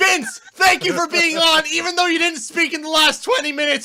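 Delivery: shouting. Thanking a guest at the end of the show, yelling. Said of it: "I'm yelling now".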